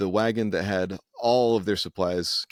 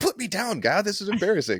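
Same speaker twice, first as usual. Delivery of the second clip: very high, swooping, indignant angry outburst; 12 semitones higher than usual. Retelling a story where she wakes up and gets angry: imitating an angry outburst. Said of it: "and then she'd get angry".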